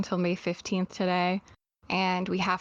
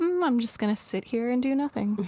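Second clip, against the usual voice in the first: pitched-up voice talking as a cat; 5 semitones higher than usual. Retelling what her cat does at the door: voicing a cat. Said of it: "they're like".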